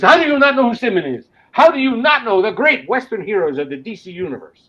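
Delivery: bad put-on Spanish accent, loud and high. Retelling what a spanish man said to you, in a bad spanish accent. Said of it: "I'm doing a bad accent".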